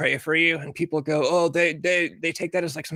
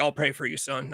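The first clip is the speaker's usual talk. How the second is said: put-on, dead-serious tone, quieter; 2 semitones lower, 4 dB quieter than usual. Retelling what a churchgoing dad said to a young fan: imitating a dead serious dad.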